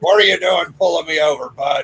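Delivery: put-on gruff male growl. Acting out a man talking back to whoever pulled him over, imitating a growl. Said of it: "Like he was growling at him".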